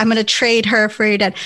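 ordinary talk, nothing marked

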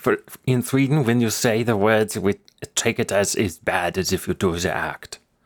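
put-on German accent. Speaker joking about charges in sweden, in a put-on german voice. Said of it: "I was doing German voice too".

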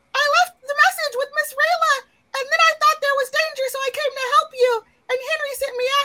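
tiny, squeaky, very high little creature voice. Speaker voicing a tiny character to the group, tiny Despero voice. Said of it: "little tiny Despero, and he says".

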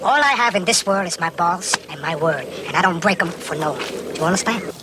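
silly high-pitched character voice. After apologizing, the speaker announces and launches into a high-pitched Worms voice. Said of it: "So this is high-pitched Worms voice".

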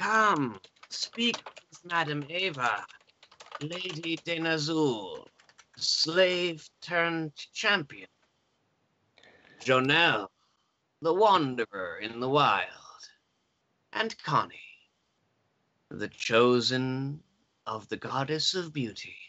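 dry, crackly crone voice, "chosen" drawn out. A crone at a crystal ball greets the arriving party, voice crackling like dry weeds. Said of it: "her voice crackles like dry weeds".

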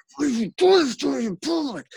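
very high, furious whisper-yelling. Recounting a woman who got up mad and went at a man: retelling whisper-yelling. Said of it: "doing that like whisper yelling at him".

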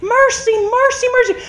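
high screaming, crying out over and over. Retelling how the car was hit, reenacting her own screaming at the time. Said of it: "And I started screaming".

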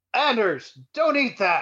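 high, full-throated, alarmed top-of-lungs scream. Bursting through the front door to stop someone eating: screaming at the top of lungs. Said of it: "and scream".

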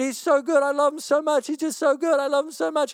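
high, tearful, tear-choked weeping voice. Retelling what a woman said, imitating her crying. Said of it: "And she's just crying".

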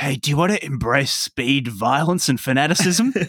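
hushed, whispering voice. Voicing a recruiter volunteer talking to someone being calmed down: whispering. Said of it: "they'll start whispering to you".

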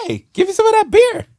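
very high, loud, whiny complaining dog voice. Voicing the dog asking for beer: voicing a complaining dog. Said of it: "he's complaining at you".

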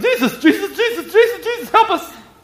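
play-acted frantic, panicked pleading, very high-pitched. Retelling the disciples waking jesus: imitating panicked pleading. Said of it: "they're freaking out".

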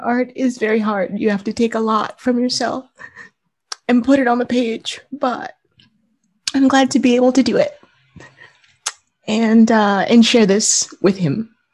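tearful. Speaking about making art and sharing it with their dad, crying. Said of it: "I know why I'm crying".

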